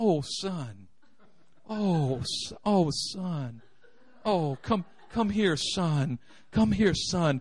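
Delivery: very slow, gentle, soft, tender doting motherly voice. Retelling how a mother answered a pouting child: imitating a tender mother. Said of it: "My mother was a tender woman".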